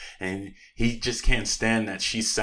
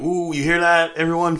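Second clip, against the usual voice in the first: eager, thrilled voice, high-pitched and loud; 8 semitones higher, 5 dB louder than usual. Retelling a film scene where Ike announces news: imitating excited Ike. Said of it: "he's so excited".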